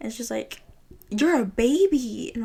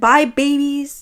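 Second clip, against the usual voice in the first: put-on woman's scream, higher and louder; 3 semitones higher, 8 dB louder than usual. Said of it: "She just kept screaming that we were babies".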